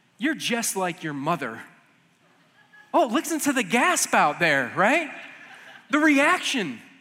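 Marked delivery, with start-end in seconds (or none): 0.2-1.6 joking, teasing tone, much lower pitch. Speaker retells a remark he once made to his wife, retelling a joking remark. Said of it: "I said jokingly to her".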